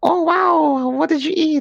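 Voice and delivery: very high, drawn-out put-on girly voice. Imitating how the girls react to small talk: imitating girls reacting. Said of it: "what the fuck is that voice".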